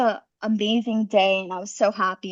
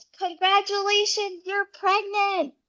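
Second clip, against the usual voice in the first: mock, very high-pitched, thrilled, excited yell; 11 semitones higher, 3 dB quieter than usual. Telling the story of a phone call, the speaker quotes the nurse, retelling an excited yell. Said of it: "And the nurse yells".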